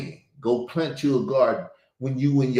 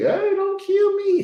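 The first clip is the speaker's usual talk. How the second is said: put-on very high, slow, wailing, baby-like crying. Voicing a goat about to be slaughtered: imitating a goat crying like a baby. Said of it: "crying like he a baby".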